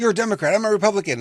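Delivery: high-pitched mock bickering tone.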